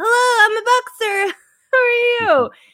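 tiny, very high put-on voice. Imitating a big dude on a phone call: imitating a high voice. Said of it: "just high, high voice".

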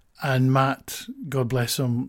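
ordinary talk

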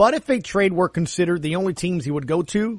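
ordinary talk

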